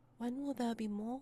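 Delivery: put-on small, high little boy's voice. Game master voicing a puppet speaking to Corvus, in a little boy's voice. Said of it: "you hear a little boy's voice coming from the mouth".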